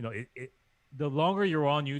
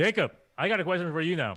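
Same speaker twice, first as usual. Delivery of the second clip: voice raised and pitched up; 6 semitones higher, 4 dB louder than usual. Announcing a question for the other speaker: raised voice. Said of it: "you raised your voice".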